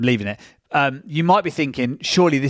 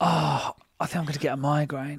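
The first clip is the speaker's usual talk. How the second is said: overplayed dramatic whine; 7 dB quieter than usual. Imitating a partner's dramatic complaint about her head: imitating dramatic complaining. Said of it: "She's so dramatic".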